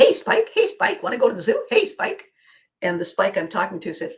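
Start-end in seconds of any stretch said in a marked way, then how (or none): 0.0-2.2 very high, bouncy, swooping overeager puppy voice. Acting out a scene as the one reaching out: eager bouncing puppy. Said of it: "I'm the eager bouncing puppy".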